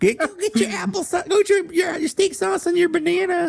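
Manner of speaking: very high, rough, creaky voice. Acting out a mom answering a hungry kid after school: imitating his mom's voice. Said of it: "That's what my mom sounds like".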